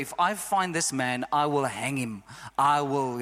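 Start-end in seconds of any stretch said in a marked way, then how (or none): none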